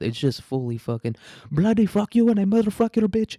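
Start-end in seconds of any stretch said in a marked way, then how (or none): 1.5-3.4 shrill, loud, angry Indian accent. Imitating an Indian person getting mad: imitating an angry Indian accent. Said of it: "when an Indian person gets mad".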